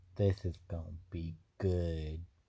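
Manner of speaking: creepy, strange put-on voice, low and hushed. Talking about Natalie Portman's return in an upcoming movie: weird, scary put-on voice. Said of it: "Why'd you do that voice?".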